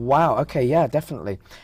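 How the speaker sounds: ordinary talk, nothing marked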